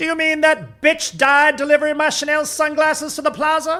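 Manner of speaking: very high scream at full volume. Retelling how Jennifer reacted to sad news, imitating someone yelling at full volume. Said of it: "at full volume says".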